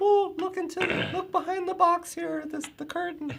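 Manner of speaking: very high, silly, funny put-on voice. Describing an upcoming unveiling, the speaker slips into a funny voice. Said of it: "I had to do a funny voice there".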